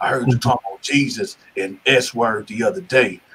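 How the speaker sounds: acted whispering. Retelling a fellow prisoner asking about jesus: imitating someone whispering. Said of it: "He was whispering".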